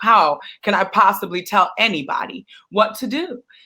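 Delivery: ordinary talk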